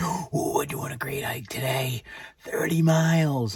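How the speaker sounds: forced excitement. Getting ready for a long hike, the speaker tries to make it sound exciting. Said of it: "Try to make it sound exciting".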